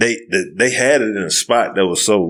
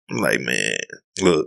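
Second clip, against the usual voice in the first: normal talking voice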